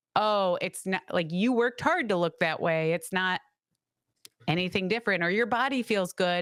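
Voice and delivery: normal talking voice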